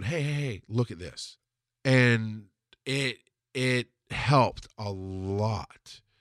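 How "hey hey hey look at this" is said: soft, gentle, tender, mild delivery. Retelling how the speaker pointed something out during a disagreement: retelling, soft and gentle. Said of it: "I could do it softly and gently going".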